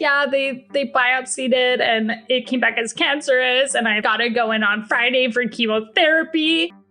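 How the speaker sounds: weepy, tearful speech, crying through the words. Retelling what a crying woman told her about her diagnosis: imitating someone crying. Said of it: "She's crying".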